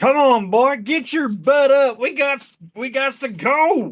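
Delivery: booming yell. In a game, a player's character holds a torch high and calls to get moving: bellowing. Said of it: "I'm going to bellow".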